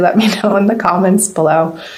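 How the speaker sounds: quick, giggly speech, laughing through words.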